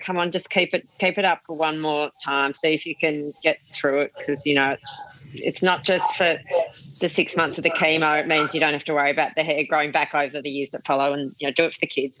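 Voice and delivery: ordinary talk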